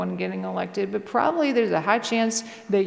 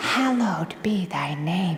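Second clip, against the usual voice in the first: low, eerie, creepy demon voice; 4 semitones lower than usual. Recounting a creepy voice praying from nowhere, imitating a creepy demon voice. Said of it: "It sounded like a demon saying the Lord's Prayer".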